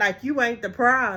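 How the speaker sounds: ordinary delivery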